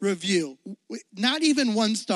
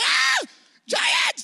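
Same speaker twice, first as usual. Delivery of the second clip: mock frantic, panicked, very high shriek. Retelling how everybody freaked out over the giants: imitating people freaking out. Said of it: "Everybody freaking out. Like".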